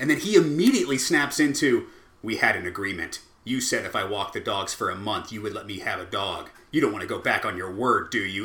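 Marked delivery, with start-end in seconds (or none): 2.2-8.5 acted menacing, threatening tone. Retelling how he pressed a parent to keep a promise about a dog, acting out a menacing threat. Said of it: "really fucking menacing".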